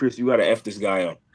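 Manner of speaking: angry outburst. Retelling the coach's backstage talk before the fight: imitating the coach getting mad. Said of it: "he got mad".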